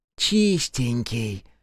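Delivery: jeering, lisped speech. An older woman greets a returning comrade with a taunt: mocking lisp. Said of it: "издевательски прошепелявила Хока".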